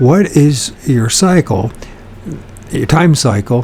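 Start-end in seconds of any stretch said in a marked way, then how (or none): none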